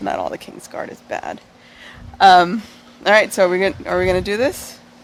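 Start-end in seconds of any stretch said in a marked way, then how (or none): 0.0-1.4 very low mutter, mumbled under the breath. Voicing a character's reply to the party: mumbling under her breath. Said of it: "she kinda mumbles that under her breath".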